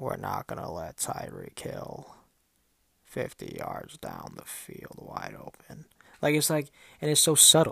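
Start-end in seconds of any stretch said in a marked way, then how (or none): 0.0-5.9 very low, slow, creaky, rough voice. Act out the man just standing there before a game, in a Bill Belichick impression. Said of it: "that was a good impression I made of check".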